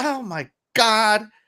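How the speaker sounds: very high, dismayed, upset exclamation. Retelling the wife's reaction to the game trailer: imitating an upset wife. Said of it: "she's upset".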